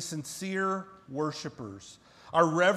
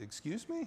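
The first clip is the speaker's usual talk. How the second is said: soft, gentle, very quiet, near-whispered voice; 5 semitones higher, 11 dB quieter than usual. Recalling how he would respond when told no: imitating him speaking very gently. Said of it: "He would have very gently said".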